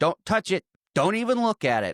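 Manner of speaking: full-on shouting. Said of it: "He's still yelling at the old man".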